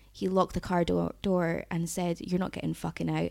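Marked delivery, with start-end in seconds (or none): 2.2-3.4 menacing words said through a giggle. Retelling what the driver said after locking the door: imitating a giggled threat. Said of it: "and giggled".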